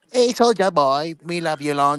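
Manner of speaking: put-on Vietnamese accent, calling out. Showing what a brothel worker in the Vietnam War sounded like: imitating a Vietnam War brothel worker. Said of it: "here's what a brothel worker would sound like in Vietnam".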